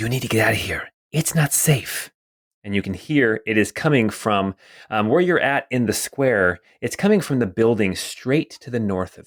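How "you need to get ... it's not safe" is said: hushed, carrying stage whisper. Narrating to a player, the speaker voices an unseen figure in a stage whisper. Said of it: "kind of a stage whisper at you".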